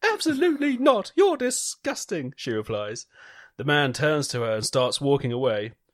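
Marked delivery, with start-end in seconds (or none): 0.0-2.3 very high, swooping put-on woman's voice. Reading a joke aloud, voicing the woman refusing: acting the woman's refusal. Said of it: "I like the character acting there".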